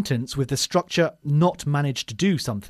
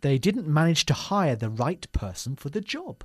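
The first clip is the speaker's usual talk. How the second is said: normal talking voice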